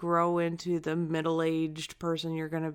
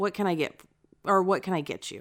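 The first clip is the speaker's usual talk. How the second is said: put-on rude teenager voice; 2 semitones higher, 4 dB louder than usual. Retelling what a drive-thru worker said, imitating a rude teenager. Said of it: "this rude teenager just says".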